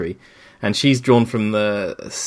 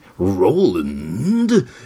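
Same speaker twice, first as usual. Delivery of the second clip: very dramatic narrator delivery, drawn-out and swooping. Repeat the name for a co-host after the first try, in an incredibly dramatic Frank Muller impression. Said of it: "it becomes incredibly dramatic".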